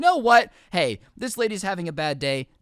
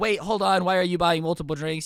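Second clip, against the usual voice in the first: usual speaking voice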